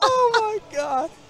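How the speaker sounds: voice breaking, very high-pitched exclamation. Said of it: "my voice is cracking already".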